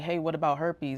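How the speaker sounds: ordinary delivery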